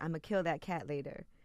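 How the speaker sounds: hushed, soft half-whisper. Retelling what a dad said about the cat: imitating a half-whisper. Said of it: "he whispered".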